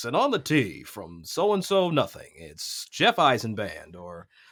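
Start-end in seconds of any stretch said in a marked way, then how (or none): 0.0-2.3 put-on swooping golf broadcast announcer voice. Mimicking a golf tournament call on the tee: broadcast announcer voice. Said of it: "let me do the broadcast voice".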